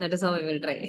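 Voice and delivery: normal talking voice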